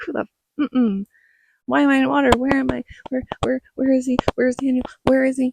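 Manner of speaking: put-on frantic, disoriented, high, rushed panic. Retelling waking in the water and calling for someone: imitating her own panic. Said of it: "freaking out".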